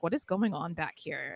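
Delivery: mock scornful, jeering, taunting voice. Retelling a wrestling segment, imitating Chelsea Green mocking the others. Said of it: "Chelsea just immediately mocks them".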